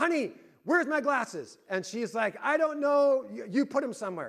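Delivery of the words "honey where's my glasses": calling out, pitched high. Retelling calling down to someone in the basement about his glasses; retelling a yell downstairs. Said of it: "I yelled down there".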